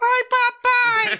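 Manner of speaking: put-on very high-pitched, loud little-girl voice crying out. Acting out a prison scam call where the caller fakes a daughter's voice: mock daughter's voice. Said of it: "Ele mesmo imita a voz".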